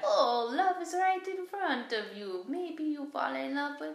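put-on high-pitched Mexican grandmother accent. Praising a woman's grandma role and recalling her lines: Kelly's Mexican abuela accent. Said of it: "Mexican abuela accent".

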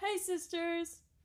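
very high-pitched, overly bubbly, peppy delivery. Trying a James Charles greeting again: too peppy James Charles impression. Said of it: "it's too peppy".

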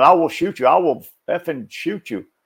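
restrained, barking put-on officer voice. Retelling how an officer kept yelling at a subdued suspect: imitating an officer yelling. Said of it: "He's still yelling".

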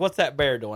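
plain

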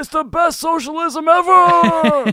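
very loud, very high hype shout, 'ever' stretched out. Showing the others a second impression right after the first: Bernie Sanders impression. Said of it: "Here's Bernie".

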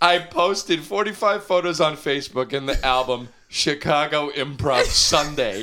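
breathless reading through laughter.

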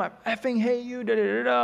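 mock angry cussing outburst. Retelling how she cussed at him, acting out her cussing at him. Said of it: "she's cussing at him".

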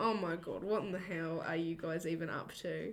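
let-down, fed-up, disappointed teacher voice. Retelling the teacher scolding the students: imitating a disappointed teacher. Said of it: "was so disappointed".

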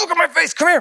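play-acted defensive yelling, very high. Retelling calling someone over to look at their face: imitating own past yelling. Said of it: "I kinda yelled".

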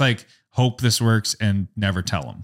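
normal talking voice

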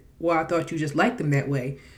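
plain

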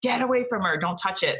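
put-on fierce, protective mama-bear voice. Retelling a birth, repeating her command to keep away: retelling a fierce protective command. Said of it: "that total mama bear instinct".

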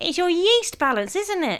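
very high, warbling, trilling voice. Mum keeps talking while the family tries to stop her, trilling. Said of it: "she was trilling".

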